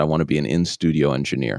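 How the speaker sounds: ordinary talk, nothing marked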